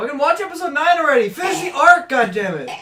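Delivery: high, loud, mock-angry yelling.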